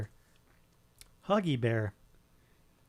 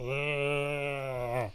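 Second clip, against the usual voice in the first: long, drawn-out zombie voice. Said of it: "what can't you imitate".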